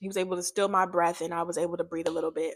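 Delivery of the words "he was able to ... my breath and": usual speaking voice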